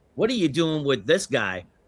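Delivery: put-on character voice with widely swooping pitch. Retelling a man turning to my wife and Debbie, in Raphael voice. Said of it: "in the Raphael voice".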